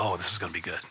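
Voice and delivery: hushed, low aside.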